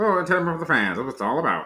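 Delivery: put-on old-time radio announcer voice. Reading a player's quote aloud in an old-timey radio voice. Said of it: "sounds like an old-timey, like just quick radio hit".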